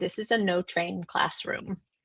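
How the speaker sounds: very pleased, proud voice. Retelling what a classroom teacher said about the door sign: imitating someone speaking proudly. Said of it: "the teacher very proudly said".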